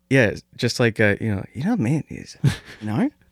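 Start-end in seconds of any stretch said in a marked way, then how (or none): 1.5-3.1 confiding, secretive half whisper, hush-hush, pitched up. Doing an impression of Phil, as if everything is a secret: Phil impression in a secretive half whisper. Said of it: "my impression of Phil is always that".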